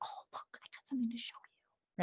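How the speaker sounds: whispered, soft, coaxing and inviting. Showing how to get a distracted child's attention, in a quiet whisper voice. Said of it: "something happening that's quiet".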